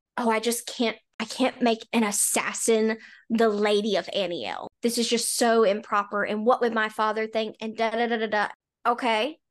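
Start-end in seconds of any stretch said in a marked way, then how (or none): none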